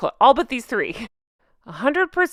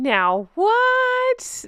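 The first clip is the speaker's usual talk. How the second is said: very high, drawn-out put-on shock on "what"; 11 semitones higher than usual. Reacting to a critic's harsh comment about a woman, pretend shock voice. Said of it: "That's my pretend shock voice".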